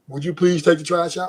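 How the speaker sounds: mock gentle, polite tone, not barking. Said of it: "You got to say it like that".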